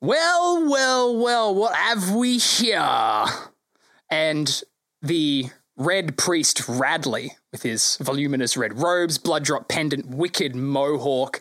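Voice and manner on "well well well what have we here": slow, haughty, lordly, swooping shout, drawn-out. Narrator describes players entering a square as someone calls from across: Radley's haughty shout. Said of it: "a haughty voice shouts out from the other side going".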